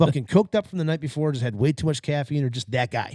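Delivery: ordinary delivery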